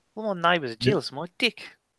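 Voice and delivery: put-on New Zealand accent. Showing how New Zealanders say deck: put-on New Zealand accent. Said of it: "They don't have decks".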